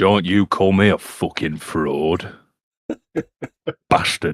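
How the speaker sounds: put-on booming, very loud bellow in northern English accent. Teased by friends about his pretend northern voice, answering back: Sean Bean impression. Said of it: "Thank you, Sean B".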